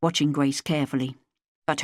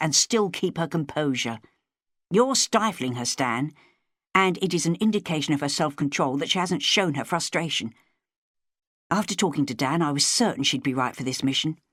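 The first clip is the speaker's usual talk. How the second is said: plain reading voice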